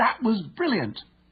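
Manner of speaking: thrilled, excited, very high-pitched exclamation. Demonstrating how someone praises a fantastic goal, excited. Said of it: "heard to say with excitement".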